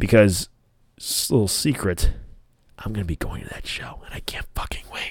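quiet, hushed whisper. Sharing a secret about show tickets while his girlfriend is in the other room, whispering. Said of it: "I'm whispering because my girlfriend is in the other room".

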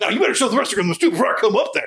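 put-on yelling wrestler voice. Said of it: "like he's yelling at them".

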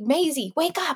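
high, copied animated movie-heroine voice. Retelling how a child wakes her sister: imitating Anna from Frozen. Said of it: "she says it the same way that Anna does in the movie".

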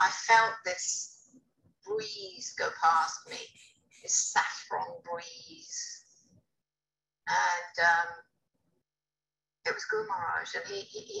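emotional, voice catching, choking up. Recalling the moment the Guru sat down, getting emotional. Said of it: "I'm sorry, I'm getting emotional".

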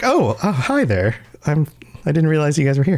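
casual, unbothered, nonchalant, offhand tone. Imitating a guest's quiet greeting to the show: imitating Cloudy Atlas, nonchalant. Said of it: "so nonchalant".

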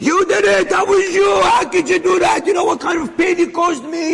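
mock, high, furious flipping-out outburst. Retelling a man confronting another who hurt him, acting out flipping out. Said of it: "he's flipping at him".

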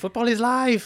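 play-acted, very high, loud, thrilled excited shouting. Retelling a player running onto the field, imitating him yelling. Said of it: "then he just starts yelling".

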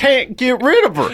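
put-on hillbilly accent, very high. Imagining someone on a show complaining about her, in a hillbilly voice. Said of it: "like a hillbilly?".

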